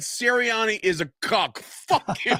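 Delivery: mock furious voice. Retelling his reply to shouting fans: imitating his own angry retort. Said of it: "I was so mad".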